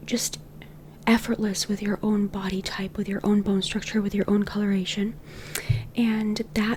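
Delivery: whispering. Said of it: "This is why I whisper".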